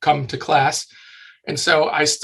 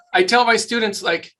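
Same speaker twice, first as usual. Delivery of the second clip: plain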